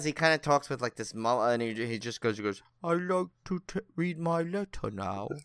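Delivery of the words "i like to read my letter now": childlike, haunting, slow, high put-on British accent. Doing an impression of a man's famous saying, little British accent. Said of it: "he has like this little like British accent".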